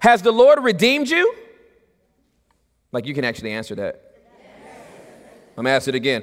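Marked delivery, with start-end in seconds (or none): 0.0-1.3 louder, very high, slow, drawn-out exclaiming. Reading a verse to the listeners: a little bit louder. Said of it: "I had to make that a little bit louder".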